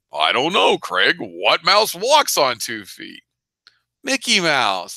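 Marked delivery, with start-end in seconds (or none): 0.1-3.2 put-on old man voice, pitched higher. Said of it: "I do your voice sort of like Santa Claus".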